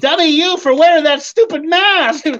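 high-pitched puppet-style voice. A ventriloquist's puppet finishes a knock-knock joke for the ventriloquist, in Dimples puppet voice. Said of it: "I learned how to do ventriloquism".

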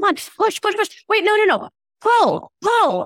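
high-pitched yelling. Retelling a delivery room scene from The Office: imitating Jim yelling. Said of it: "yelling things at her".

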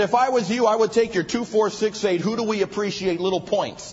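play-acted, dripping, belittling, heavy sarcasm. Speaker quotes what a man told him, mimicking a sarcastic remark. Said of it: "very sarcastic".

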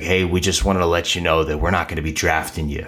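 put-on rough, gruff old voice, rattled off quickly. Retelling a phone call from a special teams coach, the speaker does his gruff coach voice. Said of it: "in this just very gruff voice".

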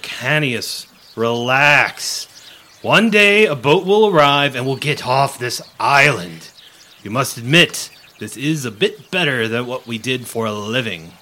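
booming, slow, slightly guttural female creature voice. The narrator voices a creature leaning against the table, a little guttural female voice. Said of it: "it's a female voice, a little guttural".

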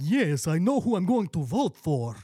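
put-on vampire character voice. Asked by other finalists who he's voting for, answering in a Vlad the Impaler vampire voice. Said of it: "I'm doing like a vampire thing".

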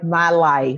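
slow, mocking, drawn-out "my life". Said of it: "Why are you saying it like that?".

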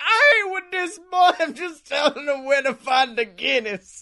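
put-on very drunk man voice, high-pitched. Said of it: "the drunkest man I've ever seen in public".

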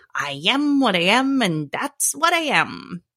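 bad, clumsy cartoon voice, swooping sing-song pitch. Recalling what Popeye always used to say, in a Popeye voice. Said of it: "that's my horrible impression of Popeye".

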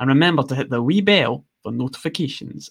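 clumsy, badly done put-on Scottish accent. Asked to show a Scottish accent, the speaker tries a bad Scottish accent. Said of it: "Give us a blast of your Scottish accent".

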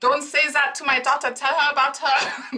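mocking German accent. Quoting her mother telling strangers what to say to her daughter, imitating mom's accent. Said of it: "She doesn't have a bad accent".

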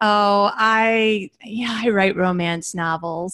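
mock very slow, sheepish, self-conscious delivery, I drawn out. Retelling answering a new acquaintance at a church game night, in an embarrassed tone. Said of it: "I was saying it in that kind of tone, which automatically that tone says I'm embarrassed".

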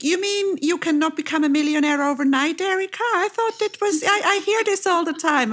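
very high-pitched, playful ribbing. Talking with Erika, teasing her. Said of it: "I'm teasing you".

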